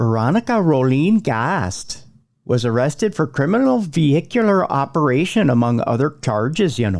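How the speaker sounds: put-on Minnesota accent. Reading out a news story about a woman's arrest, in a put-on Minnesota accent. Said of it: "Should I do the accent?".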